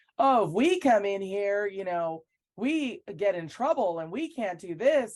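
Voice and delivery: acted, taunting, slow, loud, drawn-out holler. Recounting what a men's player yelled near her, retelling someone yelling out. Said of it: "starts yelling out".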